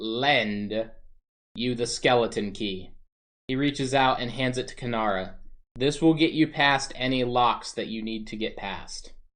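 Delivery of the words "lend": the word lend emphasized. A character handing the skeleton key to Kanara, stressing the word lend. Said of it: "and I emphasize that word".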